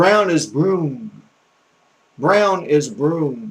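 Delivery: brown in Southern accent, sounding like broom. A speaker from the south demonstrates how they say a word: southern pronunciation. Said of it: "I'm from the South".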